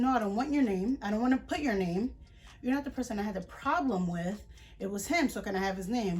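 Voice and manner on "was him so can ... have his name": ordinary talk, nothing marked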